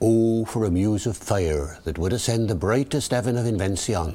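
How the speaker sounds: Early Modern English original pronunciation accent, natural voice.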